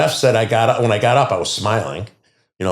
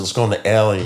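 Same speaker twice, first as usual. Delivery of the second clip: normal talking voice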